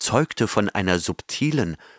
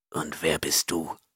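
suspicious, mistrustful whisper, quieter; 5 semitones lower, 7 dB quieter than usual. The Chimerian asks the stranger who called him a thief who he is: suspicious whisper. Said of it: "fragte der Chimerier misstrauisch flüsternd".

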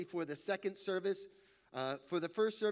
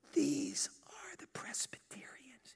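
soft, breathy, hushed whispered aside; 7 semitones higher than usual. Telling a joke, voicing Peter showing a room in heaven: whispering. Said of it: "as he whispers".

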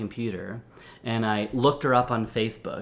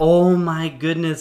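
acted, very loud, high-pitched laughing outburst; 6 semitones higher, 8 dB louder than usual. Retelling a screen-sharing mix-up on a call: retelling own laughing exclamation. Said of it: "I was just start laughing".

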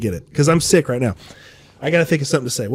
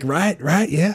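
put-on Southern US accent; 2 semitones higher, 4 dB quieter than usual. Imitating a president nodding along: George W. Bush impression. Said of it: "he bounces his head like he's like".

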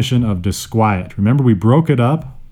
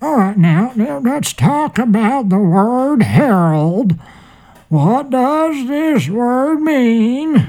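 very high, put-on elderly man's voice; 12 semitones higher than usual. Introducing the word herald to the group, in an old man voice. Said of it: "my old man voice".

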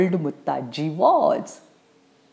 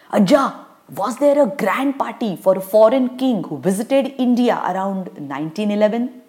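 ordinary delivery, nothing marked

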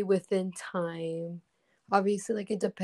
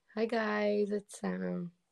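sad, quieter; 2 semitones higher, 5 dB quieter than usual. Restarting a video intro after a failed take, sad-sounding. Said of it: "Why is that so sad?".

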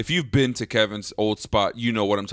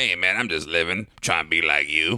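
put-on older man voice, lower-pitched; 4 semitones lower than usual. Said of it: "That's exactly how he sounds like".

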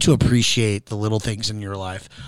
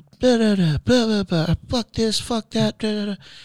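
put-on shrill, very high screaming rant; 11 semitones higher than usual. Retelling a tiny passenger going off in the back seat: imitating someone screaming, going off. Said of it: "she's screaming in the back seat, like she is going off".

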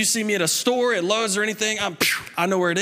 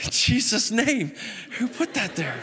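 ordinary talk

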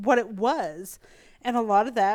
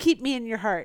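plain

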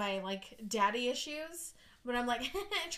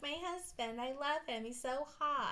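put-on soft, high, babyish princess voice; 3 semitones higher, 6 dB quieter than usual. You mimic how Claire talks to show the others, in Claire's high Disney princess voice. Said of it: "She talks like this and it gets higher".

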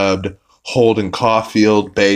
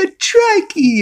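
put-on very high, thrilled, gleeful little-kid squeal; 3 dB louder than usual. Retelling a cartoon scene where a tricycle arrives: imitating Stewie excitedly. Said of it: "he's so excited about it".

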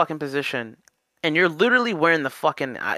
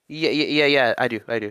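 put-on disappointed tone, lower; 5 semitones lower than usual. Retelling how a store employee answered: imitating a disappointed reply. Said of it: "but it was so disappointed".

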